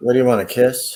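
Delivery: ordinary delivery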